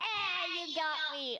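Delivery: mock last-breath cry. Proposing how the character fakes dying: mock death shout. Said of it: "a sort of death, shout".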